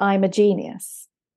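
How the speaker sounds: normal talking voice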